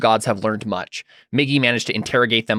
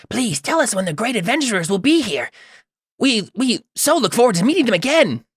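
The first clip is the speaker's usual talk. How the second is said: very high, squirrely character voice; 12 semitones higher than usual. Narrator voices a character speaking to the players, in a high, squirrely voice. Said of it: "high and squirrely".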